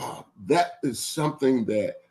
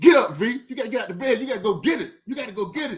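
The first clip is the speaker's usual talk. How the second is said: very high-pitched, acted, rousing rallying shout; 11 semitones higher than usual. Speaker acts out what they shout at themselves to get to the gym, retelling a shout. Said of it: "literally I shout".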